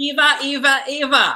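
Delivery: put-on Australian accent on a single word. Reacting to a Drag Race episode, saying a name in an Australian accent. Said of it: "That's my Australian accent forever".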